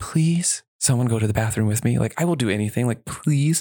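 mock, all-out, desperate pleading tone. Retelling asking everyone in line for a bathroom buddy: imitating own begging. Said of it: "begging everyone".

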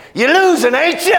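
high, yelled taunting voice.

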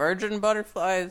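acted, high, mild street hawker's shout. Telling others about a man shouting about his drawings; retelling his shout. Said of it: "And so he was just shouting".

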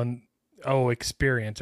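ordinary talk

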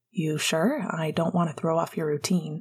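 plain

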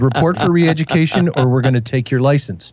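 ordinary talk

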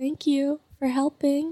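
very quiet, small, hushed, high-pitched piping voice. Describing a man met while doing dishes, quoting him: Rob's quiet high-pitched voice. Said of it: "he's got a very quiet, high pitched voice. He's like".

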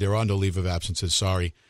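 ordinary talk

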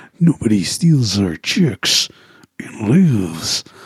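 low, slow, drawn-out tough-guy delivery. Imagining what a game character might say: Duke Nukem voice. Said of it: "He's gonna go full Duke Nukem".

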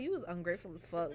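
usual speaking voice

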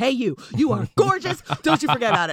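put-on pushy, really aggressive old man voice. Retelling a little old man's compliment in the city: imitating an aggressive old man. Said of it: "he just got, like, really aggressive".

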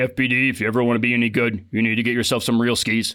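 weird, mechanical, flat monotone robot voice. Retelling what his housemate told him, the speaker imitates Josh Schmullen's robot voice. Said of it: "in his weird robot Schmullen voice".

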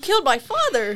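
too-happy, exaggerated delivery. Showing how Sonic says a line in a bad time: imitating Sonic sounding too happy. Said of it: "it sounds like he's, like, happy about it".

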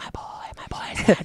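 whispered cheer, under the breath. Retelling cheering quietly while Fanny was asleep: imitating own whisper. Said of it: "I was being really quiet about it".

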